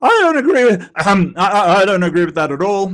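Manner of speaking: loud, breaking voice. Mocking a debater's line just heard: imitating D'Souza's breaking voice. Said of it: "your voice is breaking with how badly you're doing".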